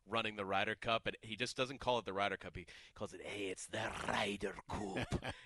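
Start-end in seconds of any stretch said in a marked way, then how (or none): 3.2-5.2 put-on Scottish accent, slow announcer-style delivery. Describing how he talks during the Ryder Cup, Scottish announcer voice. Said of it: "he does this like Scottish voice of a guy that's like announcing".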